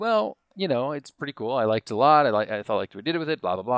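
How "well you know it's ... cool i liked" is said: ordinary delivery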